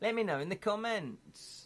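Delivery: put-on Welsh accent, very high-pitched. Streamer asking viewers to comment, in a put-on Welsh accent. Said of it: "Sorry about my Welsh accent there".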